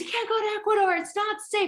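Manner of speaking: put-on very high, screaming objection. A speaker retells their husband's phone call, imitating him screaming. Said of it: "he's like screaming all this at me".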